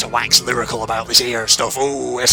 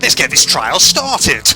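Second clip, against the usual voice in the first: loud, put-on character voice; 4 semitones higher, 6 dB louder than usual. Voicing a game character opening the final trial: Monokuma voice. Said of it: "Monokuma voice".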